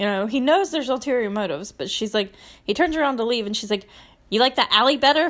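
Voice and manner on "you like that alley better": nasty, cutting, really mean tone. Retelling a show scene where a woman offers a man a room: imitating a mean line. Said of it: "she says it, like, really mean".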